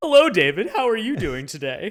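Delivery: very loud, booming voice with big, high pitch swoops. Imitating the actor's Bruce Wayne voice for a co-host: Conroy's Bruce Wayne voice. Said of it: "His Bruce Wayne voice cracks me up".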